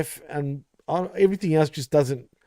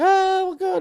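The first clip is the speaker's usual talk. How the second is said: very high-pitched, shrill screaming. Telling a story about an animal attacking a woman, imitating a woman screaming. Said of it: "She's screaming".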